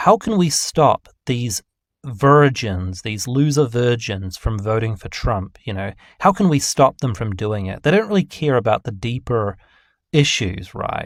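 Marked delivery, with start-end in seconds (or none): none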